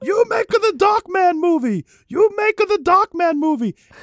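put-on shrill, high shout in heavy Japanese accent. Retelling a man who screamed at Tarantino: retelling a Japanese-accented scream. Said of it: "full-on Japanese guy, like, accent".

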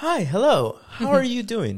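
overly polite, very high, sing-song customer-service voice. Showing the jokes about how people speak, in a customer service voice. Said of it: "In the sense of your customer service voice".

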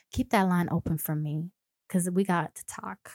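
sultry, seductive delivery. Showing a listener how to use a sultry voice on a call. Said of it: "Does that sound seductive?".

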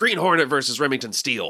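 intense put-on character voice. Pitching a made-up game that pits licensed shows against each other, intense J. Jonah Jameson voice. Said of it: "I don't know what this character voice is that I'm doing".

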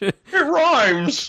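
very high, way-up-high film director voice. Showing how to do the impression better: George Lucas impression. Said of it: "you gotta go more like this".

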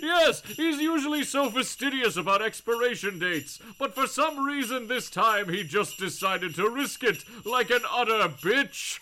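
put-on jolly, festive holiday voice. Speaker riffs on the out-of-date eggnog joke, in Santa's voice. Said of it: "in Santa's voice".

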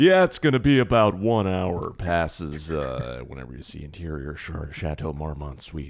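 dropped, deep character voice. Answering a request to do the guy in the wheelchair: Patrick Warburton voice. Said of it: "Patrick Warburton goes".

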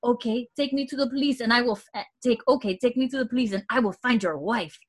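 put-on English spoken with heavy French accent. Retelling a scene where a boy starts speaking English: heavy French accent in English. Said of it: "starts speaking English with such an accent".

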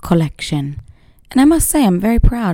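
imitated British accent. Opening a morning podcast episode, put-on british accent. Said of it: "I'm quite proud of my British accent this morning".

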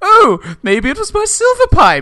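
shrill, swooping, high, loud upper-class posh voice. Retelling what a character asks about dropped pipes, imitating a really posh voice. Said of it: "in a really posh voice".

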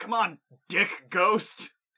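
very loud, high-pitched shouting. Voicing a character shouting obscenities at a ghost: in-character shouting obscenities. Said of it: "shouting obscenities at this point".

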